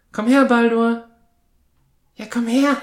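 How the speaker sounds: very high, loud, creepy, coaxing put-on psycho voice. Showing how the speaker calls the dog over, in a creepy psycho voice. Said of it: "wenn ich so eine Psychostimme auflege".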